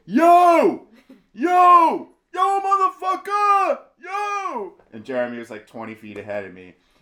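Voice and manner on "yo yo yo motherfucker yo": shrill, very loud, high New York holler, "yo" stretched. Asked what they yelled at the others, acting it out: retelling a loud new york yell. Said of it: "yelling really loud with a New York accent".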